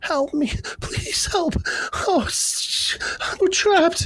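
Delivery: pleading cries from human voices. Voicing bugs with little human voices calling out: human voices calling for help. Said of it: "human voices calling out to you".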